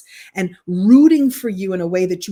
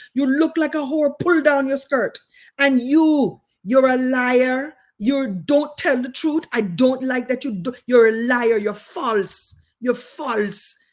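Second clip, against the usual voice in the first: high, generic, all-purpose put-on Caribbean accent; 6 semitones higher than usual. Quoting a woman addressing the speaker and other schoolgirls: all-purpose Caribbean accent. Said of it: "I'm going to do an all purpose Caribbean accent".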